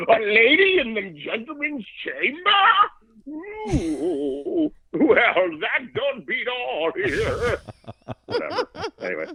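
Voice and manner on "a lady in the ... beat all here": high, slow, scandalized Victorian gentleman voice. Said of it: "like, Victorian era".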